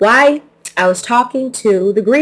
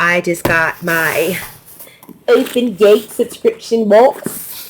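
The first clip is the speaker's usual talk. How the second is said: terrible, bad, put-on British accent. Host opening an unboxing on her channel, in a terrible British accent. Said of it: "I don't know why I said it like that. I am not British, clearly, and have a terrible British accent".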